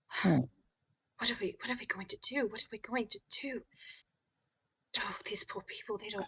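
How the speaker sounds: hushed whisper. A game master voicing a character speaking Celestial, whispering. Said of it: "he seems to be whispering".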